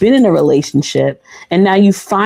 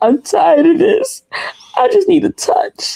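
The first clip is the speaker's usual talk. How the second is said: very high, crying, tearful pleading voice; 11 semitones higher than usual. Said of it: "She was really crying".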